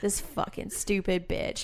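acted whispering. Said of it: "kept leaning over and whispering in my ear".

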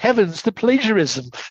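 high, theatrical, hammy, put-on cartoon lion voice. Retelling a companion's reply to a stranger's imitation, in the authentic Snagglepuss voice. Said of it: "the authentic voice of Snagglepuss saying".

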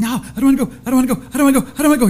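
mock frantic, repeated screaming, high, fast, loud. Telling how he started screaming on the drive: retelling his screaming. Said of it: "And he starts screaming".

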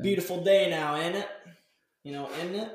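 slight Southern accent. Speaker tries out a greeting to practise accents, in a little southern accent. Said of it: "I think that's kind of a little southern".

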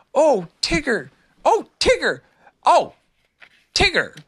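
very high-pitched, eager, excited squeaking. Narrating a children's story, a character cries out before riding up a tree: excited squeak. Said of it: "squeaked Roo excitedly".

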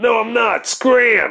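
shrill, very high, loud, very slow drawl, cab driver voice. Retelling a puppeteer answering from a trash can: Oscar the Grouch voice. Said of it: "he remembers the cab driver's voice".

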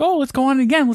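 put-on very high, super excited voice of a five-year-old. Retelling a five-year-old's reaction at the end of a ride, imitating him super excited. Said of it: "Like super excited".

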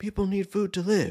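high, whispery put-on voice. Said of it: "as Joe Biden would say, you know, in his whisper".

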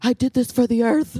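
play-acted very high, shrill shout. Retelling how security walked a man out, retelling his yell at people. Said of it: "he yells at people".

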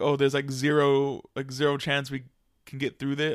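ordinary talk, nothing marked

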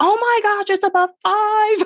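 acted high-pitched screaming burst. Retelling a phone call with the nurse, imitating own screaming. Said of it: "literally screaming at the nurse being like".

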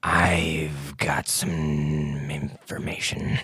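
sinister, ominous movie-villain delivery, drawn-out "I've". Telling the group he has some information, like a movie villain. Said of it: "I don't like how you say that as if you were, like, a movie villain".

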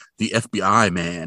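normal talking voice

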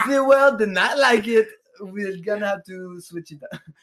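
put-on mixed French and German accent. Acting out a guy addressing his guys, in a French-German accent. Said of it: "Forgive my, like, French-German accent".

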